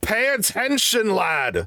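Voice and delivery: very high, loud, swooping shout. Narrating a scene to the players, a familiar voice gives a loud shout. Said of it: "you hear a loud".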